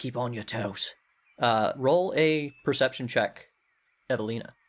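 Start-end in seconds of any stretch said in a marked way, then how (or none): 0.0-0.9 whispered, much quieter. Finnboggy warns a player from the back of the line, whispering a warning. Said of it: "He's whispering to you".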